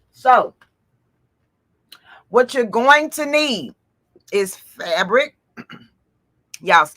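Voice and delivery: speaking with mouth full, chewing mint. Explaining to viewers what supplies they'll need, talking while chewing peppermint. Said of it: "I was chewing on a peppermint".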